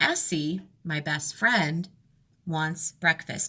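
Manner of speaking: short pauses before and after "my best friend". Teaching pauses around a phrase in a sentence: pauses around my best friend. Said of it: "listen to my voice as I just take a little break. ... I paused after Essie and after um, best friend".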